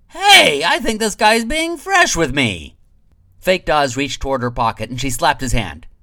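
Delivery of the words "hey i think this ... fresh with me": put-on half-drunk, very high, loud, shrill outcry. Narrating Valina, still half-drunk, calling out to the room: half-drunk Valina voice. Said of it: "[name] slowly turned her half-drawn eyes toward him, still half-drunk. / she said. / [name] was at the bar in the middle".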